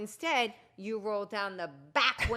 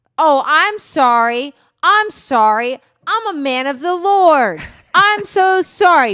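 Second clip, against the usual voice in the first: forceful, stern, very loud voice; 6 semitones higher, 19 dB louder than usual. Retelling how the driver apologized to a woman: imitating a stern apology. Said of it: "stern way".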